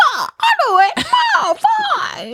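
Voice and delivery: very high, slow, swinging, stretched-out voice. Imitating a friend agreeing to do improv after a few beers: Jimmy Stewart voice. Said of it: "in your mind Barrett is Jimmy Stewart".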